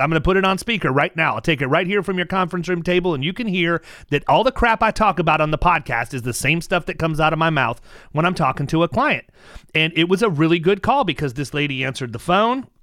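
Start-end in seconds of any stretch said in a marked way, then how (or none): none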